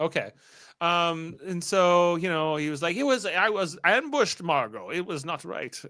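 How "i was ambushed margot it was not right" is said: fake, put-on German accent. Retelling a man's words to margot, in a put-on german accent. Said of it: "I've said I wouldn't do more of this German accent".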